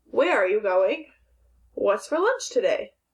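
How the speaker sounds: rising pitch on the words going and today. Teacher reading example questions aloud to students, rising question intonation. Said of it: "usually your voice changes for questions too".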